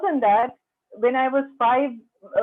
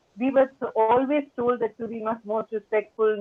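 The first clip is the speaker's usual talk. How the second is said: normal talking voice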